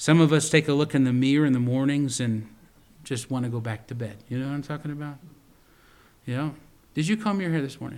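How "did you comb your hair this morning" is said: playful teasing, ribbing. Speaker addressing a listener he calls brother: teasing. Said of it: "I'm teasing".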